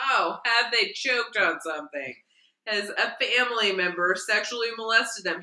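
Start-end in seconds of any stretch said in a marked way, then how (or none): none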